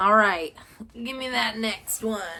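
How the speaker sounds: laid-on, exaggerated put-on Southern US accent. Discussing horror movies, asking for the next one in a put-on southern accent. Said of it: "I put on a southern accent".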